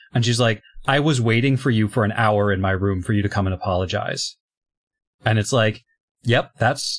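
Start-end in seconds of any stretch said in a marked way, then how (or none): none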